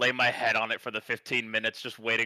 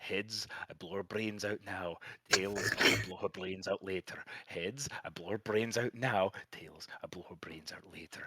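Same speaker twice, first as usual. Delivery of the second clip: soft, hushed whisper under the breath; 3 semitones lower, 8 dB quieter than usual. Voicing a character flipping a gold coin: whispering to himself. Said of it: "he's whispering this to himself".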